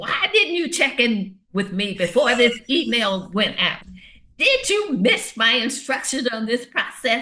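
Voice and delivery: fear-driven, accusing tone, high and swooping. Demonstrating fearful accountability about an email, in a fearful accountability tone. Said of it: "fearful accountability".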